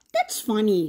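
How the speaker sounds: usual speaking voice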